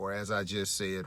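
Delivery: ordinary delivery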